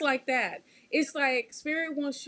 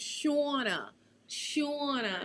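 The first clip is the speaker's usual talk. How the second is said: put-on New Jersey accent, quieter; 3 dB quieter than usual. Showing how a mother-in-law says the name Shauna, imitating mother-in-law saying Shauna. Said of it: "how my mother in law says my name".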